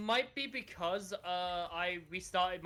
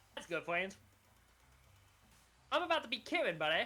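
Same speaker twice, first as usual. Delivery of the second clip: cartoonish, exaggerated Canadian accent. Trading friend and buddy lines with another speaker, in a South Park Canadian accent. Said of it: "speaking South Park Canadian now".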